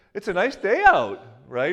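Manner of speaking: Canadian lilt, statement rising like a question on right. Showing how Canadians talk, saying a statement as if it's a question. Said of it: "they say every statement like it's a question".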